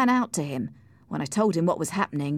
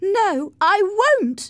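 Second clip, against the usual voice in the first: shrill, very high, loud shouting; 14 semitones higher, 6 dB louder than usual. When a man demands the key from her, she shouts. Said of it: "she shouted".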